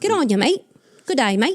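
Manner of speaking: put-on, tentative first attempt at Australian accent. Trying out an Australian accent after being teased about it: attempted Australian accent. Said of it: "taken a stab at the accent".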